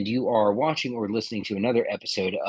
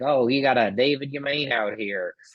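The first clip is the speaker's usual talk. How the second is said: put-on Yankee accent; 3 semitones higher than usual. Introducing a guest by showing how a Yankee would say his name, in a put-on Yankee accent. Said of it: "I could say it like a Yankee".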